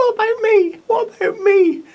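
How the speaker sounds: tiny, very high, loud calling voice. While watering, voicing a forgotten orchid, in a small little voice. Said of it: "I could hear this little voice going".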